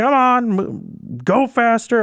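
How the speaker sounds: very high, very slow, drawn-out drill commander voice. Retelling a commander rushing soldiers to go faster: put-on commander voice. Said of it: "I can't do a commander voice".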